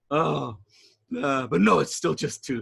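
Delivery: words cackled through a hyena-like laugh. A storyteller voices Tooth answering a question about his name: hyena-like laughing voice. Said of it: "laughing in his hyena like voice".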